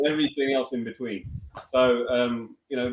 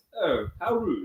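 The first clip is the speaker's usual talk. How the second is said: put-on upper-class English accent; 4 semitones higher than usual. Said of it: "I could do the poshing English accent".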